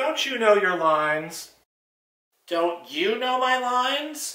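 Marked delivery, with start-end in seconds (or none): 2.5-4.3 high, sarcastic, wisecracking ventriloquist's dummy voice. In a ventriloquist comedy act: ventriloquist dummy voice. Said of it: "More fun with my [name] dummy".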